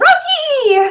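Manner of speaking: excited, very high shriek, name stretched out. Voicing a character who hugs a friend: shrieking a name. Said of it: "basically shrieks".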